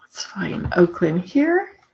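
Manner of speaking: soft muttering under the breath, to oneself. Searching a file list for Oakland while demonstrating software: mumbling to myself. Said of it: "Sorry, mumbling to myself".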